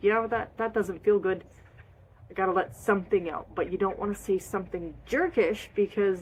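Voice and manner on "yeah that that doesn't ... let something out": ordinary delivery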